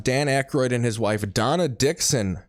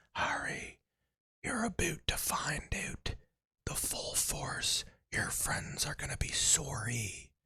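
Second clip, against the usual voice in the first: put-on whispered, breathy, menacing villain Canadian accent; 3 semitones higher, 15 dB quieter than usual. Speaker imagines the film villain speaking to Harry: Voldemort with a Canadian accent. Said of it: "Canadian accent and he's like".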